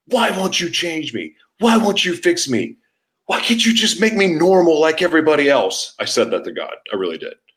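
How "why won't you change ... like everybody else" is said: mock, high, all-out screaming from the lungs. Recounting a second night in jail, retelling screaming at god. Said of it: "I'm screaming at God".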